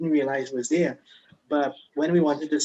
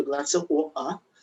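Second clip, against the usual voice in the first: put-on British accent with glottal stops. Listing accents they can do, asking for water in a glottal British accent. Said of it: "the glottal British".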